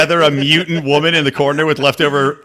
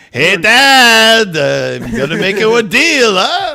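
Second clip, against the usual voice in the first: put-on Israeli accent, very slow, pitched up, "Dad" stretched out; 5 semitones higher, 3 dB louder than usual. Voicing Jesus talking to his dad: Jesus with an Israeli accent. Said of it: "Jesus now has an Israeli accent".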